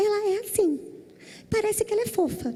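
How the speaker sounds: high, sweet cuddly bear voice.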